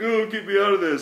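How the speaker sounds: acted high, weepy, tearful sobbing voice. Retelling how two people reacted while both were crying, imitating someone crying. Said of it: "they're both fucking crying".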